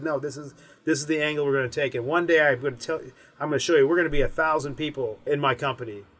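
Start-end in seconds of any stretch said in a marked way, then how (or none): none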